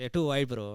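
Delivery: put-on Indian accent. Retelling what recent arrivals from india say: imitating an indian accent. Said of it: "I like that accent".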